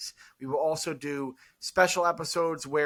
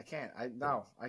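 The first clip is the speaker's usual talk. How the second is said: usual speaking voice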